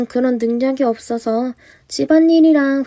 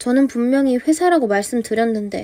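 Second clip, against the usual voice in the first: ordinary talk, nothing marked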